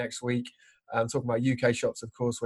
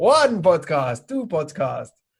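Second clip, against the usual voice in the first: slow, booming voice with big pitch swoops; 5 semitones higher, 6 dB louder than usual. A podcast host, told he sounded like the Count, counts podcasts in the Count impression. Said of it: "you sounded like the Count".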